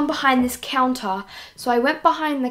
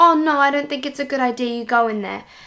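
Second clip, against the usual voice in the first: frantic, scared, panicked, freaked-out tone. Retelling how a girl panicked as Mum went to check the shed, imitating panicked speech. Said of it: "she was freaking out and she went".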